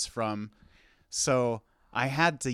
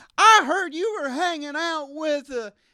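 put-on very high young boy voice; 5 dB louder than usual. Describing an offstage line in a play, doing a 12-year-old boy voice. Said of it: "offstage voice of a 12-year-old boy who has to be like".

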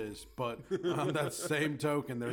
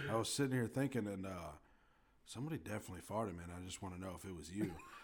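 caring, sympathetic, concerned tone; 6 semitones lower, 7 dB quieter than usual. Acting out asking a classmate about a fart: put-on concerned citizen tone. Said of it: "Say it like a concerned fucking citizen".

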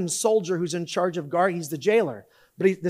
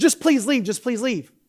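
terrified, desperate, high-pitched voice; 5 semitones higher, 3 dB louder than usual. Retelling what a frightened man said to Paul, retelling a terrified plea. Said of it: "And so he's terrified".

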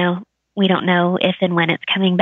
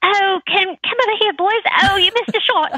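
very high, put-on English accent; 13 semitones higher than usual. Describing playing badminton in the backyard, the speaker calls to the boys in an english accent. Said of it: "we need to have an English accent".

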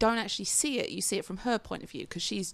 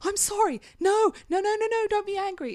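shrill, very high, loud, drawn-out apologetic pleading; 12 semitones higher, 7 dB louder than usual. Retelling playing a game where everyone gets angry: imitating own pleading yell. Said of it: "I'm literally yelling".

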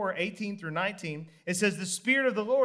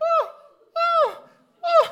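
put-on very high-pitched, very loud, excited little-girl squeal; 9 dB louder than usual. Retelling a grown man's excited reaction, imitating him sounding like a little girl. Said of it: "He sounded like a little girl".

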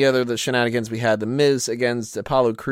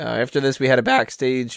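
voice cracking and breaking. A co-host moving on to the next segment, voice cracking. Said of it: "voice cracking there".

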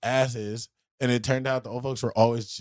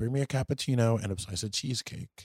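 normal talking voice

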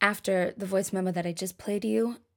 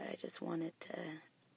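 soft, whispered, nearly voiceless. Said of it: "my voice is still gone".

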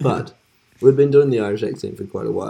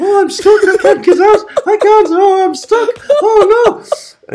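put-on panicked Irish accent, higher, louder; 11 dB louder than usual. Retelling a friend stuck in a drunk accent: imitating panicking in Irish accent. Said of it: "panicking in an Irish accent".

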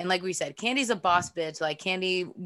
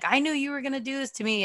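mock full-on screaming, high and shrill; 6 semitones higher than usual. Recapping a season, the speaker acts out Portia's fights with Candy, imitating Portia screaming. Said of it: "her just screaming like".

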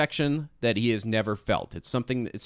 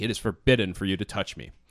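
put-on sharp, snappish tone, lower; 3 semitones lower than usual. Retelling a scene where she refuses a helping hand: imitating a sharp snap. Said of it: "she just snaps at him".

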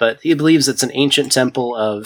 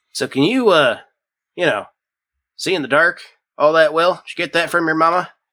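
pitched-up elf character voice; 5 semitones higher than usual. Voicing the elf Grandpa Yenli questioning a half-human, Grandpa Yenli voice. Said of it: "broad-shouldered elf um kind of makes his way out of the woods. You can see in the light of the campfires that he is covered head to toe in blood. Um, he also looks a bit old. He's completely bald".

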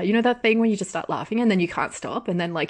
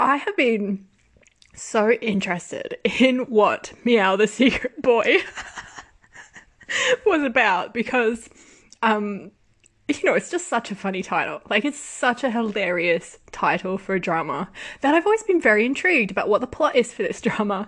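talking through tears of laughter; 4 semitones higher than usual. Apologizing to viewers mid-video, laughing so hard they're crying. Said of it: "now I'm laughing so much that I'm crying".

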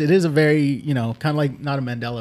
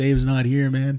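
heavily stoned, spaced-out, dazed delivery. Retelling a comedy bit, answering a knock at the door: stoned Tommy Chong voice. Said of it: "he's stoned out his fucking mind".

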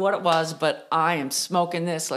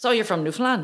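terrible, bad, fake put-on Irish accent; 4 semitones higher than usual. Retelling a dinner, the speaker quotes the man seated beside them: bad irish accent. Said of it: "That's the worst Irish accent ever".

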